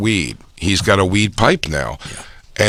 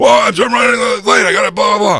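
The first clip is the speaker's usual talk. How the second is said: acted, very high-pitched, shrill yelling; 12 semitones higher, 4 dB louder than usual. Retelling how a late man yelled at the woman waiting outside: imitating someone yelling. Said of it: "He's yelling at her".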